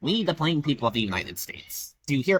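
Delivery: stoic, speech-making oratory voice. Imitating the real recorded speaking voice of Teddy Roosevelt. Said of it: "if you actually listen to his voice".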